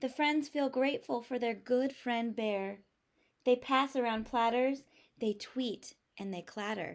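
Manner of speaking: plain reading voice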